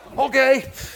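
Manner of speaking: high, loud shout with laughter.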